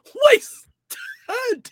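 out of breath, breathless, very high-pitched yelp. Reacting to a clip, imitating a man who ran out of breath: imitating a breathless shout. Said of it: "he ran out of breath 'cause he goes".

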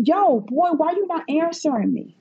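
high mock yell. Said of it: "and I'm yelling".

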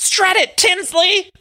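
play-acted, very high-pitched cheering yell. Retelling how a supporter yelled at a fashion show, imitating someone shouting.

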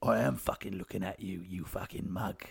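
rough put-on old-bloke voice. Acting out a back-and-forth between two Danny Dyers: Danny Dyer impression. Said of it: "How many impressions have you done today?".

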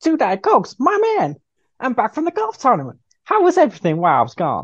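very high, swooping, chirpy sing-song voice. Acting out a script scene as Wider John, back from golf: Wider John voice. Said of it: "I need to remember how I did this, uh, voice".

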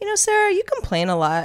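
mock, very high, matter-of-fact tone. Retelling what he said to her mid-conversation, in a put-on matter-of-fact tone. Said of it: "he just kind of said it matter-of-factly".

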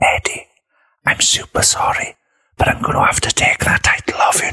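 re-enacted, put-on whisper. The speaker retells what they whispered into an NXT superstar's ear, retelling a whisper. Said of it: "I whispered into his ear".

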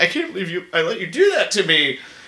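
sounding really upset. Retelling a character's line from a movie: imitating a very upset tone. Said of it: "in a very upset tone is like".

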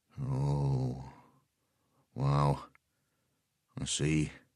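very hushed, low murmur with a drawn-out "oh". Narrator reading a character who breaks a dead silence; low voice. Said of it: "saying in a low voice".

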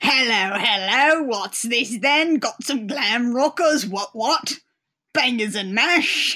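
fake, over-the-top, bad Cockney tough guy accent. Describing a crewman with the worst accent, mimicking him in a bad Cockney thug accent. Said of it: "He's like somebody trying to be a Cockney thug".

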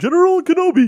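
weird screech, very high, shrill and very loud. Greeted, [name] replies in a General Grievous voice.

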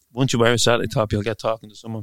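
ordinary talk

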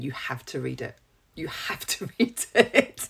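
slow, spaced-out, deliberate, emphatic, insistent delivery. Urging the other speaker to read a book: talking slowly. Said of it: "I'm gonna talk slowly so that this goes in".

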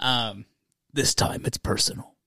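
deep, grand, epic movie-trailer announcer read. Reading a beer's name aloud and adding a tagline, reading like a movie title. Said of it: "I'm reading like it's a movie title".

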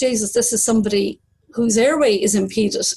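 ordinary delivery

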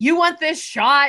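acted high-pitched screaming. Retelling a coach telling a dancer she's at the top: imitating someone screaming. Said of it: "screaming at her".

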